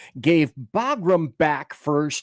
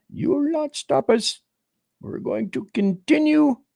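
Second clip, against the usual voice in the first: very high, bad, put-on Pakistani accent; 10 semitones higher than usual. Acting out the first thing they said after the bunker buster, talking like some kind of Pakistani. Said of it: "Here I am talking like some kind of a rancid Pakistani".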